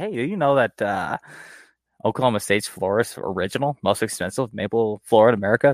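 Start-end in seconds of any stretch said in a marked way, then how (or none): none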